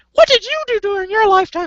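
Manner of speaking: put-on squeaky, girly high voice. Imagining a women's rights fighter questioning a petition signer, imitating a girl's voice. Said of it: "I'm trying to do a chick's voice".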